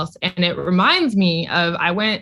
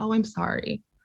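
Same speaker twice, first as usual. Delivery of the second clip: put-on somber tone, quieter; 4 semitones higher, 7 dB quieter than usual. Retelling how he answered on hearing her boyfriend has other partners, mock-somber apology. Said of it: "like the most somber expression".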